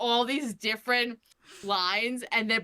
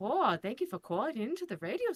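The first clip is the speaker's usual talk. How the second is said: put-on Minnesota accent, spoken more quietly; 5 dB quieter than usual. Trying out a voice for Peggy, the speaker demos a Minnesota accent. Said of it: "she has a, a Minnesota accent".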